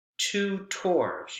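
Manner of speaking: tutors, equal stress on both syllables. Showing how to say the compound word: double stress on TUTORS. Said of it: "You have double stress".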